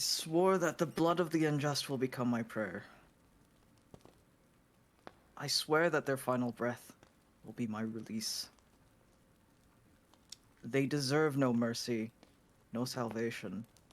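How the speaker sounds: deliberate, every word meant, full conviction. Repeating a paladin oath when urged, saying an oath with conviction. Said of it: "repeat it, but with, like, conviction".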